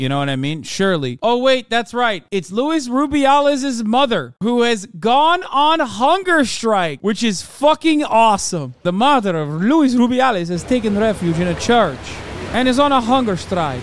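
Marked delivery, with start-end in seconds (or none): 8.8-13.8 spoken with an Italian accent. Speaker relaying a news item, doing an Italian accent. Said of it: "I'm doing fucking Italian".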